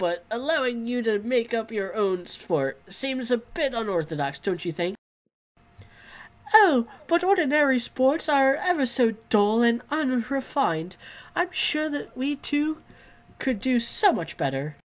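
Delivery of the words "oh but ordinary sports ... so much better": high-pitched cartoon mouse voice. A game character answers a question about inventing a sport, in a Mickey Mouse voice. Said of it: "why did you make her sound Mickey Mouse? / We will play it with watercolors and sequins, and there shall be a sport bard and a goalie, / why did you make her sound Mickey Mouse?".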